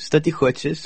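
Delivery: put-on Arabic-accented speech. Retelling how a man at the counter answers an old woman, in an Arabic accent. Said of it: "עושה לה במבטא ערבי".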